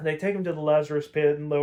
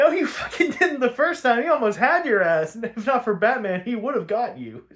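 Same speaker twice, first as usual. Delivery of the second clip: high-pitched, loud, exasperated outburst. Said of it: "And I'm thinking".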